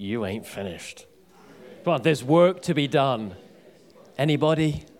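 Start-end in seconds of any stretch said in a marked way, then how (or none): 0.0-1.1 soft, very quiet whisper. Leading everybody to tell the person next to them: whisper. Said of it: "whisper to the person next to you".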